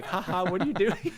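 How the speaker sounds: mock giggling through words. Retelling how a friend reacted to a video: Nigel laughing while talking.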